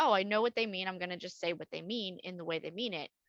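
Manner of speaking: ordinary talk, nothing marked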